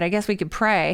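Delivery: ordinary delivery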